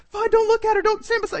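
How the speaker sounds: very high, insistent, protesting tone. Retelling how his wife talks when she doesn't want him doing something; imitating wife's high voice. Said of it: "it gets real high".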